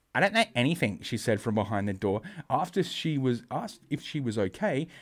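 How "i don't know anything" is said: high put-on female voice. Reading aloud a news quote from a woman: put-on female voice. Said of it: "the one female voice I can do".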